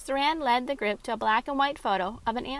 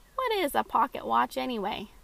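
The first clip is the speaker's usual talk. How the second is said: ordinary delivery, nothing marked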